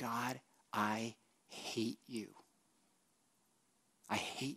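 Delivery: whispered under the breath. Voicing what people might admit saying to God, whispering under breath. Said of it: "I've whispered under my breath".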